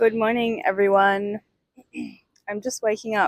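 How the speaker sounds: hoarse, croaky, just-woken voice. Just woken up, greeting everyone from the beach in the morning, croaky voice. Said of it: "so my voice is a bit croaky".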